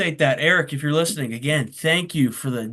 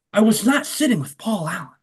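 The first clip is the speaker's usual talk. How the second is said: put-on American accent through the teeth, higher; 6 semitones higher than usual. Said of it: "he was always talking like this".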